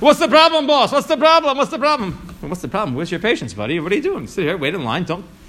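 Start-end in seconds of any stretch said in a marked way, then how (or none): 0.0-2.9 acted-out mock yelling, pitched much higher. Telling a story about a man who jumped the line, the speaker acts out him yelling. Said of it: "So he starts yelling".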